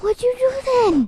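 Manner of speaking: eager and very loud, pitched way up. During a voice-direction take, the actor delivers the question sounding eager. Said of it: "You sound eager".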